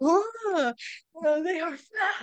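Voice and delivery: very high, slow, drawn-out startled ghost cry. Acting out a ghost decoration shocked that the inflatables died: shocked ghost impression. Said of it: "your impression of the ghost surprise".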